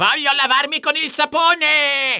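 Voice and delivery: very high, loud yell, sapone stretched out. Ulrich, hearing that humans wash with soap, shouts to his troll parents. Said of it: "gridò Ulrich".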